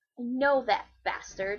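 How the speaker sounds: growled words. Reading a story, Lovino reacts after being scolded, growling. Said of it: "he growled".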